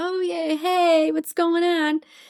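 very high, drawn-out, forced cheerful tone. Retelling trying to act normal around people while hurting: imitating a fake cheerful greeting. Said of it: "trying to act normal around people like".

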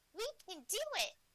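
high, birdlike character voice. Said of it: "the birds".

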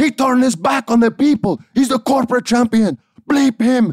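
put-on very high, loud, thick Puerto Rican accent. Act out your grandma talking to you about The Rock, in grandma's heavy Puerto Rican accent. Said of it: "she has this heavy Puerto Rican accent".

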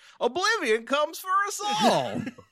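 very high, goofy cartoon voice. Imagining how a character sounds while chatting with co-hosts: Gomer Pyle voice. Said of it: "like a Gomer Pyle voice".

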